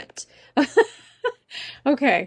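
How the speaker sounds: talking through laughter. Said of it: "I'm laughing at some of your reactions".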